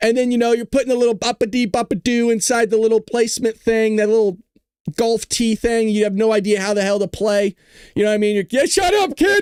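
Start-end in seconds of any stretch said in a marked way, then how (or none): 8.5-9.4 very high, slow, drawn-out yelling. Acting out a parent snapping at a kid: imitating a parent yelling. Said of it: "And you're yelling at your kids".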